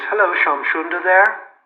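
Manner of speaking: put-on nice English accent. Retelling a visitor popping in the door asking for someone: imitating an English accent. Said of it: "with a nice English accent says".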